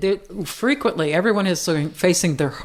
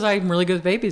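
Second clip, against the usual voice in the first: ordinary talk, nothing marked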